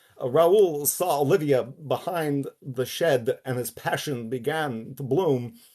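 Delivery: very slow, loud, high put-on drawl, each word dragged. Showing how a romance novel was read aloud: Christopher Walken impression. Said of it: "that imitation right there isn't even an imitation of Christopher Walken".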